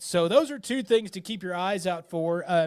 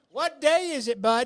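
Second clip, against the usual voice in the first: full, high, raised yell; 7 semitones higher, 4 dB louder than usual. Asking a fellow host what day it is, yelling. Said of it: "I don't know why I'm yelling".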